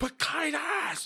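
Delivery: furious, high, drawn-out scream.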